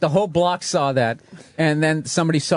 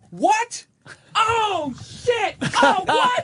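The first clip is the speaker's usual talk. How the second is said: badly overacted surprise, very slow, very high. Retelling a suspect hearing that a man is dead: imitating badly faked shock. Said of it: "it was the worst acting job I've ever seen".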